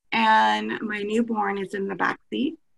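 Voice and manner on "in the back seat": normal talking voice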